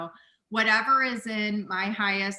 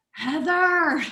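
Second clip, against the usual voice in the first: high, raised angelic, heavenly voice; 8 semitones higher, 6 dB louder than usual. Retelling how a dear friend called out her name, in an angelic voice. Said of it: "in his angelic voice".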